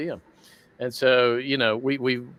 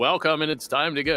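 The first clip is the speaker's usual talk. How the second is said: put-on intercom announcer voice; 3 semitones higher than usual. A voice actor demonstrating his guide character's announcement, Pizzaplex intercom voice. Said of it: "the intercom voice of the Pizzaplex".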